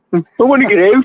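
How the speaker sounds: put-on very high-pitched, loud Birmingham accent. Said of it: "that's a Brummy accent".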